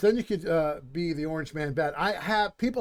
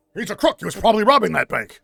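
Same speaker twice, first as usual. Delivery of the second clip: very loud, booming, ranting delivery at full blast; 4 semitones higher, 9 dB louder than usual. Quoting a Spider-Man film character: J. Jonah Jameson impression. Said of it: "I do a pretty good impression of him".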